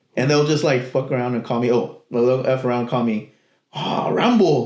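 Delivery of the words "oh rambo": put-on heavy, laid-on Spanish accent, pitched up. Retelling how coworkers called out a nickname: imitating a strong accent. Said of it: "with a strong, like, accent".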